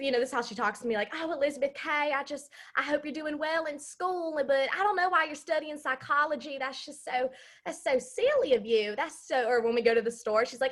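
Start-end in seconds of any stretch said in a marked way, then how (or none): 1.1-9.0 put-on broad, heavy, thick Southern accent. Imitating how she talks to the speaker, in a thick southern accent. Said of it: "she has a really thick Southern accent".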